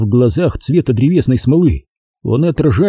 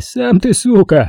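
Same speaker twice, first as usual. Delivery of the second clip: sarcastically astonished, mocking surprise, pitched up; 9 semitones higher than usual. A narrator reads the reply to Sergei's curse from the man whose boot pinned him: mockingly surprised. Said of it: "Насмешливо удивленно отозвался тот".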